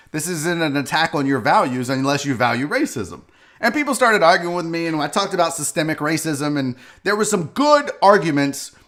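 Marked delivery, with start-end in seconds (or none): none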